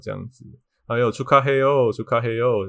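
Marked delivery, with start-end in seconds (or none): 0.9-2.7 snide, sour, sarcastic needling tone. Retelling how a rude shop clerk congratulated them: imitating a sarcastic clerk. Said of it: "以讽刺，讽刺的这个语气".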